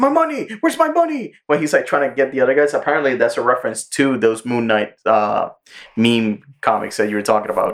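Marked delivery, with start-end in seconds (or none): 0.0-1.3 very high, insistent, demanding cab-driver voice. Retelling a scene where the cab driver wants his money: imitating the cab driver demanding money. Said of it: "the cab driver's like".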